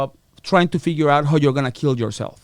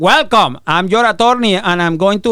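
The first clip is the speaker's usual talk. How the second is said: put-on raised voice with a Spanish accent; 4 semitones higher, 5 dB louder than usual. Retelling meeting the attorney the family hired, with a Ricky Ricardo accent. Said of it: "my attorney was like Ricky Ricardo".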